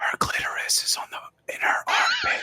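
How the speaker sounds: whispering as quietly as possible. Playing a character who leans over to another: whispering as quietly as possible. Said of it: "just whispers as quietly as, as he can".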